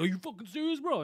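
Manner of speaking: aggressive yelling, pitched high. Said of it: "you were yelling at them on the mic".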